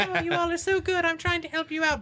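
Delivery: sweetened, very high-pitched, all-nice voice. Retelling a movie villain's warning, imitating the Red Queen sweetly. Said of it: "I like how she was all nice".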